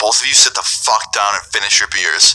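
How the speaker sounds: ordinary delivery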